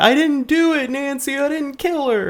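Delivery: acted, shrill screaming at a very high pitch. Retelling a movie scene where Rod is caught: imitating someone screaming. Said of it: "Rod is, like, screaming".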